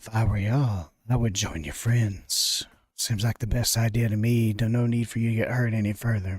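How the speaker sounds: bodiless, unseen-sounding voice. Narrating a scene, voicing what the listeners hear as a disembodied voice. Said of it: "you hear a disembodied voice".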